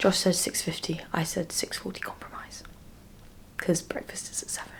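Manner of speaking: hushed whisper. Answering what time the alarm is set for, whispering. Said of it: "I don't know why I'm whispering".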